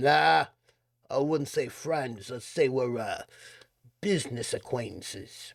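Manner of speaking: gruff, rough New York street voice. A man answers a kid asking if he's friends with the guy living here, gruff New York voice. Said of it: "His voice is gruff and tinged with the streets of New York".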